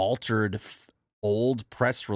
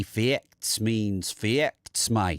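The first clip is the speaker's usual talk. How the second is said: put-on Australian accent. Answering a viewer's request to do an australian accent: put-on australian accent. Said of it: "you asking me to do an Australian accent?".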